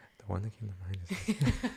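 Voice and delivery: mocking whispering voice. Teasing the other speaker for whispering, in a mocking whisper. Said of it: "you're doing this".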